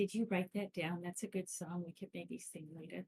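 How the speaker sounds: whispering in a character voice. Leaning down to another character to ask quietly: whispering in character. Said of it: "just whisper to Gomez".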